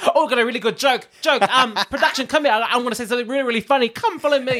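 high-pitched, begging, attention-seeking voice. Imitating Art Simone calling production over for a joke. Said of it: "That's what I feel like".

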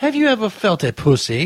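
bad British accent, high and slow. Mocking a preacher in a video: horrible british accent. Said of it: "it's a fucking horrible British accent".

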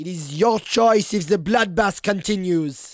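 very loud, booming, high-pitched character shout. A player's character hops onto the dais and yells at the Frog King, yelling.

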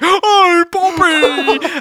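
mock over-the-top shrill shriek, very high and loud. Teasing a podcast friend about his energy levels: imitating George's high energy. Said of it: "the two polar opposite sort of energy levels".

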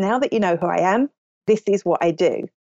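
plain

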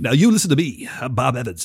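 put-on voice sounding congested. Imitating an actor's way of talking in a role: imitating Matthew Goode as Bob Evans. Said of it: "he always talks like this".

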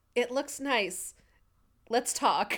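utterly defeated, slow delivery. Retelling a scene where a character answers a question about a haircut: imitating a defeated tone. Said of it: "very defeatedly goes".

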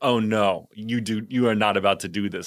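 imitated speech through laughter. Retelling a woman's reaction while she was cracking up. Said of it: "cracking up".

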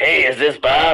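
mock scruffy, scratchy voice. Retelling a casting director's phone call: imitating a scruffy, scratchy voice. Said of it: "doing a fake voice and being like".

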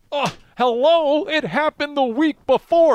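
loud high-pitched ranting.

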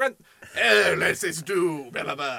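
put-on British accent, put on. Acting out someone collecting feudal rent, in a put-on British accent. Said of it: "I don't know why I'm British in this".

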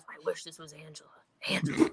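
mock muttering under breath. Retelling what an opponent mutters while they fight; imitating someone muttering. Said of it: "he's like muttering under his breath".

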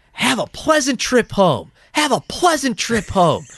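furious, really mad, very high-pitched voice. Retelling what a Titans fan kept saying at the game, imitating a really mad voice. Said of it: "but like in a really mad voice".

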